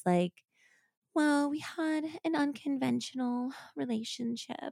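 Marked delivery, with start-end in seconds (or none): 1.1-4.7 put-on soft, high, breathy babyish voice. Quoting a woman on a recording, imitating her breathy, high baby voice. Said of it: "She does have like a real like baby voice too. ... It's like kind of like breathy and high".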